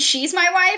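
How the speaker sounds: stress on she's, with a rising pitch on wife. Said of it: "There's a difference between".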